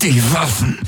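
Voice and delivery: high gasping voice through clenched, gritted teeth. A man in pain calls out to the others: gasping through clenched teeth. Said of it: "keuchte er mit zusammengepressten Zähnen".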